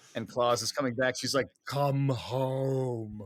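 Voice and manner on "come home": low voice with the word "home" drawn out. Quoting a line from a film scene in the rain: low voice imitating Meryl Streep. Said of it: "the low voice when she's standing out in the rain".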